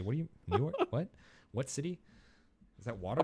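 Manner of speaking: baffled, bewildered, swooping dwarf voice. Voicing dwarves who don't understand the words New York City: confused dwarves voice. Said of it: "they look at each other very confusedly".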